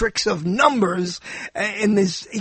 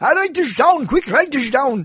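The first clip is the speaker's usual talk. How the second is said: high cartoon crazy professor voice, Austrian accent; 5 semitones higher than usual. Imitate the crazy professor Dr. Fablianek telling you to take notes, in his cartoon Austrian doctor voice. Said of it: "That's exactly how he sounded".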